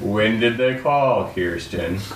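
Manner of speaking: very cold, icy voice. Retelling how Bucky asked when the bank called, mock-cold, as Bucky. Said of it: "Bucky in the coldest voice".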